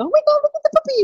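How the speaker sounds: very high, gushing, doting voice. Explaining vocal tonality, the speaker demonstrates how people greet a puppy, in a really high voice. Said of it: "We go really high".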